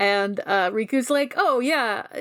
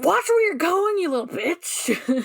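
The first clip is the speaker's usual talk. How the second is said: put-on furious old woman voice, very high, yelling; 9 semitones higher than usual. Retelling a scene where a shopper gets bumped: imitating an angry old lady. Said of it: "this old lady gets so mad".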